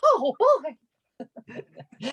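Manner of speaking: very high, sing-song cartoon voice with bouncing pitch. Doing an impression in a coffee shop guessing game: Mickey Mouse voice. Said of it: "Welcome to the Mickey Mouse Clubhouse".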